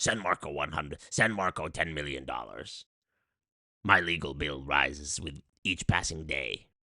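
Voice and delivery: very low, evil, demonic, possessed-sounding voice. Speaker plays their own lawyer as if possessed, evil possessed voice. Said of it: "I'm doing an evil voice".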